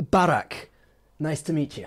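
put-on Scottish accent. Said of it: "the Scottish accent is".

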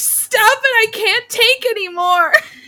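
shrill, very high, high-pitched screaming screech. Quoting the listener screaming back at them while they kept talking, imitating someone screaming. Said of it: "you were screaming at me".

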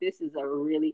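usual speaking voice

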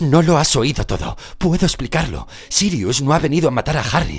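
very loud, shrill, rushed delivery. Lupin answering Severus, speaking hurriedly. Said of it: "hablando a prisa".

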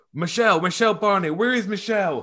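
mock shouting, loud and high. Telling an anecdote about tense talks, retelling Donald's shout. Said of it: "You can hear him shout".

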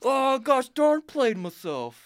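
shrill, very high, very loud airhead rich-person voice. Mocking rich people who get lost at sea on jet skis: dumb rich person voice. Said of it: "Every time I do that voice".

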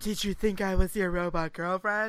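seductive, sultry, sexy come-hither voice. Retelling a scene where a sister crawls into bed with him: imitating a sexy voice. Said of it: "that's pretty much the voice she used".

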